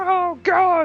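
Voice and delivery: high, loud, mock American shouting. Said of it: "American humor is more about, like, shouting".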